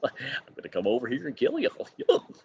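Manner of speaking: breathy cartoon voice. Doing Goofy as Art the Clown, in a Goofy voice. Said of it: "do do Goofy as uh as Art the Clown".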